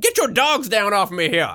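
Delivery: high, rustic character voice.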